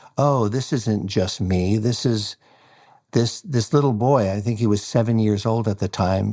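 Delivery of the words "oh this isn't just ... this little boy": ordinary talk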